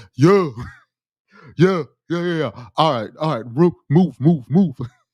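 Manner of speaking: deep, rushed, barking, made-up drill-sergeant voice. Showing the voice he can create to yell at you, deep put-on voice. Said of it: "I can create a deep voice".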